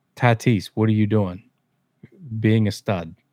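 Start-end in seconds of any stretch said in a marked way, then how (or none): 0.2-1.5 mock, put-on yell. Acting out someone yelling at a superstar, retelling a yell. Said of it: "Why are you yelling at me?".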